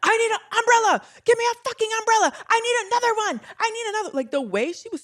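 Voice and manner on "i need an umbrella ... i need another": very high-pitched, shrill, demanding yelling. Act out a woman addressing her people while paparazzi could see her, imitating someone yelling. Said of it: "she's yelling at them like".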